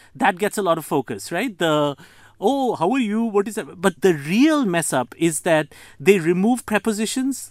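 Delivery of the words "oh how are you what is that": put-on Indian accent with intonation played up. Showing the indian accent intonation that gets focus abroad: put-on indian accent intonation. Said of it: "the intonation".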